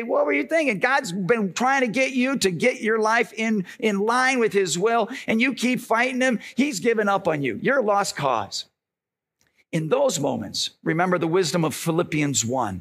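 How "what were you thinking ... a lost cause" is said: ordinary talk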